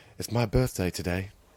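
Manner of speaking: put-on depressed voice. Retelling a movie scene, quoting the little assistant: imitating a depressed voice. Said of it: "he said it with such depression in his voice".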